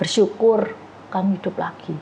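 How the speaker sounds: plain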